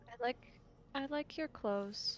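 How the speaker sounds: hushed half-whisper. Telling a story, speaking to carvings on a stone sarcophagus, half-whispering. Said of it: "I whisper".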